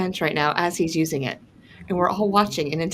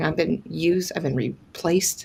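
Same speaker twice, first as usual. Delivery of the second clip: normal talking voice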